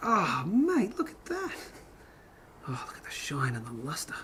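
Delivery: swooping, animated, gushing enthusiasm with big pitch swings. Admiring a silver coin's shine in a put-on voice: Steve Irwin voice. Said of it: "Now I'm turning into Steve Irwin".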